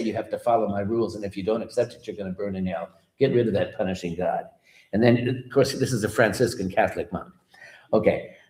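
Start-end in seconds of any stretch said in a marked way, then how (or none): none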